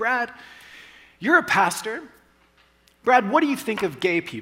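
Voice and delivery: high, loud, pointed delivery.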